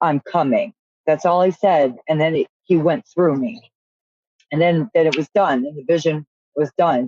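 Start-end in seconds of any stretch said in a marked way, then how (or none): 0.0-0.7 imitated stern tone. Retelling words spoken in a vision: retelling a stern statement. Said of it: "he very sternly said to me".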